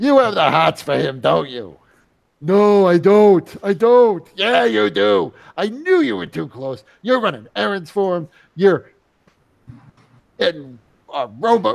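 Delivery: furiously angry tone. Voicing Drick storming in to accuse someone: storming in, accusing angrily. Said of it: "Drick comes storming in".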